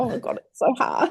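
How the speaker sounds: high-pitched, slow, on the verge of crying. Retelling phoning her during a hard shoot: imitating being almost in tears. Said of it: "I was ringing her almost in tears going".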